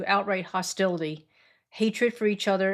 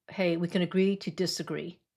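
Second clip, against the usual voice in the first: put-on friendly, even-tempered, nice calm voice; 3 dB quieter than usual. Recounting defusing a disagreement with a member, retelling a nice, calm voice. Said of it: "in a nice, calm voice".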